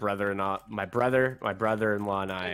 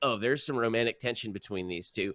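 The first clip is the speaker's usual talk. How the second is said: ordinary talk, nothing marked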